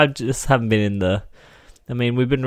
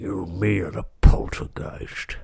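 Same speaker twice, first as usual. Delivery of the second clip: put-on English-accented voice, really deep and low; 3 semitones lower, 3 dB quieter than usual. After thanking patrons, saying the name in a really deep put-on voice. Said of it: "That's my weird English guy impression. ... It was just me, but really deep".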